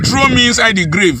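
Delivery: plain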